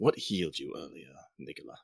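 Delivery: low, breathy, hushed near-whisper. In a role-play, a character steps awkwardly close to ask a question, low voice. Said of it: "speak in a low in a low voice".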